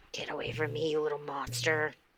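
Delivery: very hushed, quiet growl and hissing snarl. Voicing Pick, who growls at a cat: growling, hissing at a cat.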